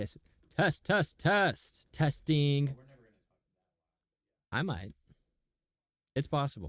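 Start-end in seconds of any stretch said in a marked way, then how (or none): 0.0-2.8 very loud, slow, deliberate, evenly spaced delivery. Testing the microphone, deliberately talking loudly. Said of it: "let's try to talk like loud".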